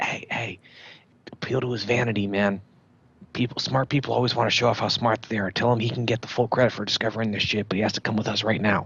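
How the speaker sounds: fast stage-whispered delivery. Speaking in character in a game, advising another character: whispering. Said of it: "I'm gonna whisper to".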